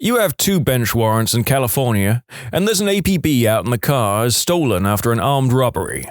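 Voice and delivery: ordinary delivery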